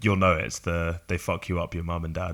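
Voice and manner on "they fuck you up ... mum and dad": plain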